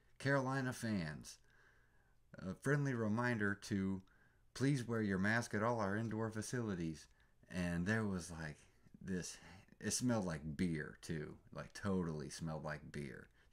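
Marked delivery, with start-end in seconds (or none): 0.2-7.1 high, robotic, automated announcer voice. Imitating the stadium's automated announcement between quarters: robot voice. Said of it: "like a robot voice".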